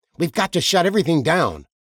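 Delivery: high, loud voice with near-manic urgency. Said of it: "his voice nearly manic".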